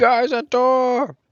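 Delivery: shrill, full-throated, loud, high-pitched yell. Calling out to the party in character about a door: yelling. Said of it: "I'm just yelling it".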